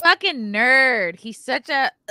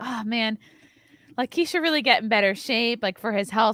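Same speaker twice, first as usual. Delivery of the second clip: plain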